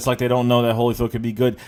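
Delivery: ordinary talk, nothing marked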